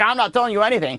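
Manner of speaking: talking through put-on hysterical laughter. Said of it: "he starts laughing hysterically".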